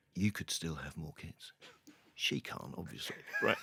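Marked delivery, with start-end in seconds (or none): 0.2-1.5 put-on whisper, lower. Retelling what a doctor said during an appointment: imitating a whisper. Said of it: "he whispers".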